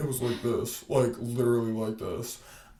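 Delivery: put-on very deep voice, like a deep-voiced boy. Retelling a classmate's voice from middle school: imitating a very deep voice. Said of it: "he had the deepest voice I've ever heard".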